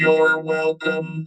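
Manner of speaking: high, loud robot voice. Imitating a machine answering thank you: Battlestar Galactica robot voice. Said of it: "Nice, nice effect".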